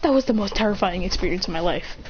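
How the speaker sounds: usual speaking voice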